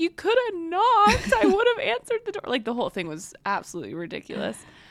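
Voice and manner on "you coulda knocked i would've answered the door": mock tearful pleading, crying woman voice, higher and louder. Retelling a woman answering after police ripped her door off: imitating a crying woman. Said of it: "she's crying".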